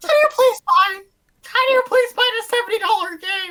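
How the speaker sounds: very high, very loud, shrill squeaky character squeal. Two friends riffing about Toads wandering a gift shop: attempted Toad voice. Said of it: "I can't do the voice".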